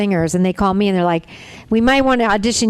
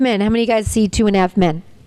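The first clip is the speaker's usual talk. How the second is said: ordinary delivery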